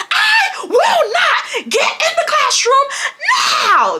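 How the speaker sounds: acted-out, very high, full-on scream. Retelling a confrontation with him: retelling a scream. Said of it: "I started screaming back at him".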